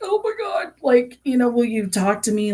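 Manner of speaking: very high, loud, excited voice. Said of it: "stop her and be like".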